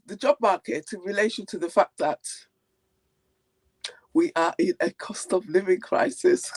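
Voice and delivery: words broken up by laughter while talking. Asked which topic to start with, the speaker answers while laughing while talking. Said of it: "Why are you laughing?".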